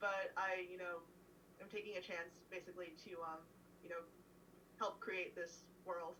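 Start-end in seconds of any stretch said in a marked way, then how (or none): none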